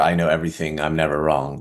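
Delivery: ordinary delivery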